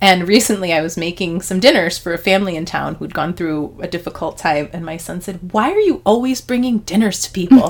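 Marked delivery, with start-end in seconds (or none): 5.5-7.7 high-pitched, mock fed-up, exasperated tone. Retelling a son's question, quoted imitating the son, mock-exasperated. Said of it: "in this exasperated voice".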